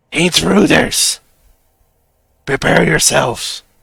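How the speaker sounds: hoarse, rough-edged, rasping call. A game master voices someone behind a door, raspy shouting voice. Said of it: "you indeed hear a raspy voice on the other side".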